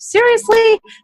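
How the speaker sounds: very high, loud, incredulous squeak on "seriously". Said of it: "and she went".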